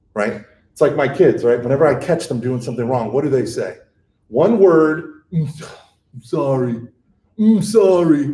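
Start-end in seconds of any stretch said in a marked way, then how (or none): 5.3-8.3 mock, very slow, dragged-out, begrudging child voice. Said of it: "they roll their eyes".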